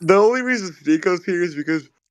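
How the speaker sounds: high, stretched words pushed through a yawn. Speaking in a group conversation while yawning. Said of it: "sorry, I'm yawning".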